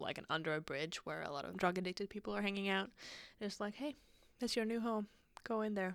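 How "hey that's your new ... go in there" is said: normal talking voice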